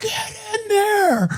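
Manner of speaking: shrill scream pitched very high. Retelling what a beet-red guy screamed: imitating someone screaming. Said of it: "he just screams".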